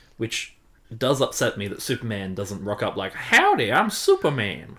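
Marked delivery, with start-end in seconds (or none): 3.2-4.6 massive Southern US drawl, loud and swooping. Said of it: "a massive southern accent".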